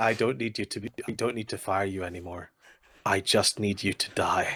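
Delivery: put-on disturbingly calm, composed, menacing tone. Retelling what the boss says while pinning someone down: imitating a calm, collected threat. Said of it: "he says it in this really calm and collected way that's really disturbing".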